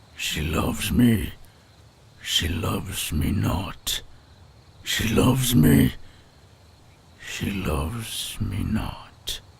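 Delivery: loud, lovesick werewolf character voice. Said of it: "Lovestruck Werewolf (Day 3)".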